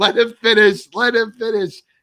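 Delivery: high, loud, angry, mad yelling.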